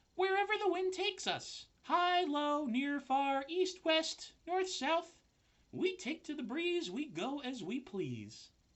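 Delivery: put-on little, very high baby spider voice. Reading a story aloud, a baby spider answers Wilbur, in a baby spider voice. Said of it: "that's my best baby spider voice".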